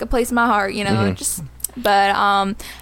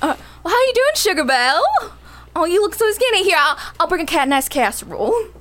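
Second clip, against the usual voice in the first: put-on Southern US accent; 6 semitones higher than usual. Asked to do a southern accent, greeting someone in a southern accent. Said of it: "Bring southern accent now".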